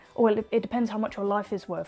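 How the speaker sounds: ordinary delivery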